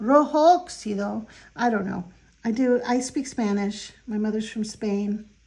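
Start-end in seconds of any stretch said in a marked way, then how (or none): 0.0-1.3 loud Italian accent, put on for show. Naming the next paint color being swatched, Italian accent. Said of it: "Should I do that with an Italian accent?".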